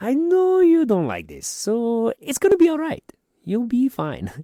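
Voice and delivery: put-on very high, loud, swooping, sing-song European accent. Starting the joke of the week for a reluctant co-host, in a Doofenshmirtz voice. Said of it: "getting that northern European accent in there".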